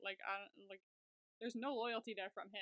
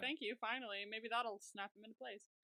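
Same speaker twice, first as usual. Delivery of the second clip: ordinary delivery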